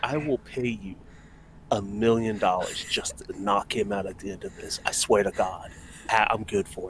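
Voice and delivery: low, hushed, secretive half-whisper. Acting out a man half-whispering in your ear before a fight: half-whispering. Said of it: "He whispers in your ears".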